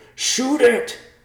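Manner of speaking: piercing, shrill, very loud high-pitched scream. As a creature dives from the sky, screaming at a companion. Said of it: "Riverpaw screamed at Thomas".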